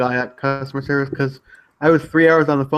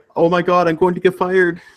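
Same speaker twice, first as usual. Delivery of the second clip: put-on worried, panicky man's voice, higher; 4 semitones higher, 3 dB louder than usual. Retelling a locked-out caller's reaction: imitating a worried man. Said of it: "He was so worried that he was gonna get fired".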